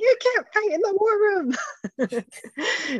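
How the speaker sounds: very high, squeaky voice in New York accent. Picturing Rizzo the Rat cast as the president in the movie: Rizzo the Rat voice. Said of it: "Rizzo with his New York accent delivering some of these lines".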